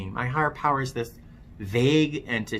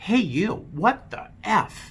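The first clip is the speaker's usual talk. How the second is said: play-acted high, raised drunken yell; 8 semitones higher than usual. Recounting a drunken night, re-enacting yelling out. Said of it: "I'm yelling out".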